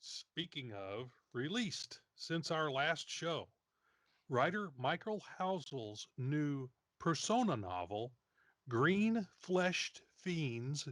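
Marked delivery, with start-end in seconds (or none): 8.7-10.9 very slow, deliberate, careful enunciation. Show host naming a new novel title, said very slow and careful. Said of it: "Notice I say that very slowly and carefully".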